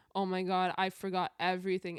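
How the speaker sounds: ordinary talk, nothing marked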